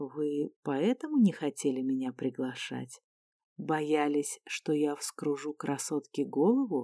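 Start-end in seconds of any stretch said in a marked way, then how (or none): none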